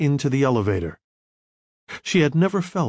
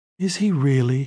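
usual speaking voice

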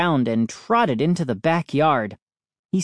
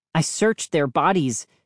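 ordinary delivery

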